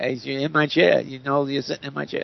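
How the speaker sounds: very bad put-on Yiddish accent.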